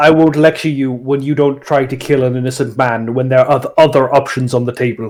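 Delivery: deadly serious, grave tone. A player speaks in character to another character, in a very serious tone. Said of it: "in a very serious tone".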